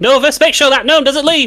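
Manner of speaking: shouting. Voicing a character who calls out to Novus; shouting. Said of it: "She just shouts".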